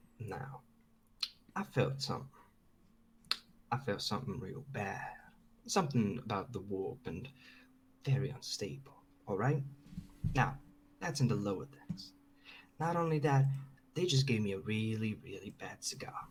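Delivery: hushed whisper. In an acted scene where the room may be bugged, whispering. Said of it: "Why do you think I'm whispering".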